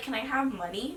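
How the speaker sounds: plain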